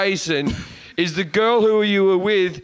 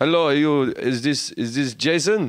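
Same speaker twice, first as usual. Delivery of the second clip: put-on German accent impression; 5 semitones lower than usual. Retelling how a german podcast listener stopped them after a gig, imitating a german accent. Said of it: "Like that, right?".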